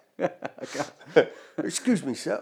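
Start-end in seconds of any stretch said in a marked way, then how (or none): 1.6-2.4 laughing, mock policeman voice. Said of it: "policeman's voice, please".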